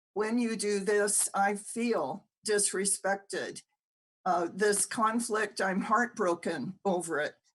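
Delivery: ordinary talk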